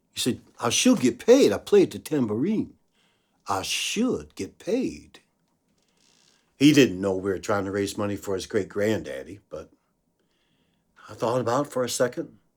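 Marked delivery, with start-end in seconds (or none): 0.6-5.2 put-on deep Southern child voice, swooping pitch.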